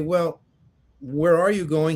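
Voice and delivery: ordinary talk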